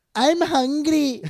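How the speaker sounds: very high, itty-bitty little voice. Imitating how a woman just talks: imitating a woman's little voice. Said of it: "That's how she just talks".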